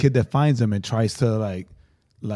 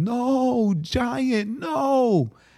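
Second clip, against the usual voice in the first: put-on very high sobbing child wail, bawling scream; 12 semitones higher than usual. Retelling a kid running up upset about a flying giant, imitating a child screaming, bawling. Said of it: "And he's screaming".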